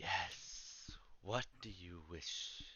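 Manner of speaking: dark, breathy, very quiet whisper. Narrating to a player, the sword in front of them answers: dark whispering voice. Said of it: "you hear a dark, whispering voice from your sword".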